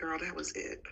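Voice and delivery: resigned, beaten-down, deflated tone. Answering whether everything was covered: sounding defeated. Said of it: "You sound so defeated".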